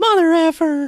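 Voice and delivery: put-on squeaky voice. Imitating co-host Greg's impression of Jim Cornette: Jim Cornette impression. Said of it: "us doing an impression of an impression".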